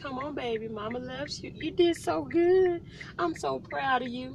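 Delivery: nice, gentle, high, sweet motherly voice. A mother who has to be both parents shows her nice voice to her baby. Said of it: "I have to have my nice voice".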